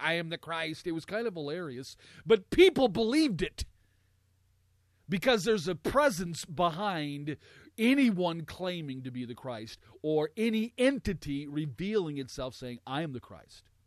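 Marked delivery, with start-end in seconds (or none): 0.0-0.9 mechanical, robot-like delivery. Speaker imitating an alien channeled by a person, in a robot voice. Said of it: "He talked like a robot".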